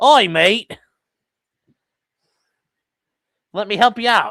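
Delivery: put-on high Aussie accent. Voicing a dog offering to help another dog: Australian accent. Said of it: "Although he's an Australian".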